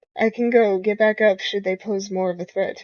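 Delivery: ordinary delivery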